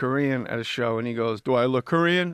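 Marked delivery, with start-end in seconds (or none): 1.4-2.3 miffed, upset, offended comeback. Retelling a man's reply when asked if he was Korean: imitating an upset man. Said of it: "he was upset".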